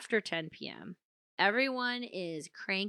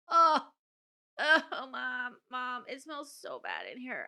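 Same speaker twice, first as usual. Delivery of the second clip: put-on grossed-out child voice, slowly dragging each word; 4 semitones higher than usual. A mother retells her child opening a smoky room, imitating Emmeline disgusted. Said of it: "And she's like".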